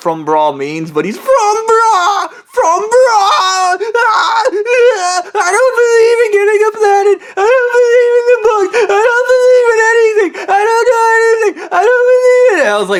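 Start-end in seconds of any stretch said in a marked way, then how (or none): 1.2-12.7 mock screamed rant of nonsense, higher. Retelling a phone call, imitating someone screaming nonsense. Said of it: "him screaming incoherent nonsense".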